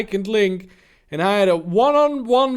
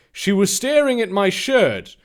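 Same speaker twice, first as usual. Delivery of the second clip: normal talking voice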